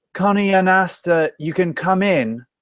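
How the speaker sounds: loud, very high calling out. Storyteller voicing an unseen voice calling Connie and Asta in, louder voice. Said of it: "a louder voice".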